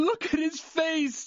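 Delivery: very high words pushed through sobs. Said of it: "As the rookie was sobbing".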